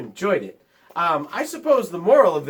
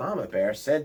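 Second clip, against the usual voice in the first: plain reading voice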